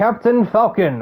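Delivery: game announcer voice. Naming a debuting driver, calling out his name like the Smash announcer. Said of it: "saying that like the Smash announcer".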